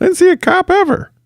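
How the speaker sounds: very high, worn-down, beleaguered prisoner voice. Acting out prisoners of war reacting to american police: beleaguered prisoner of war voice. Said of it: "That's my P O W voice".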